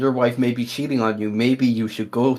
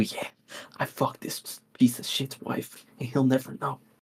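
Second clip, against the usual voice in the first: soft, breathy whisper under the breath; 8 dB quieter than usual. Acting out the best man confessing in a hypothetical wedding: acting out a whisper. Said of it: "he's just whispering to you".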